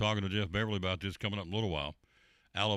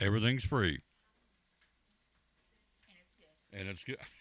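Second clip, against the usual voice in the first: talking while chewing, mouth full. Presenter at a company's free food event, talking with a mouthful of pizza. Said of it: "She says with a mouthful of pizza".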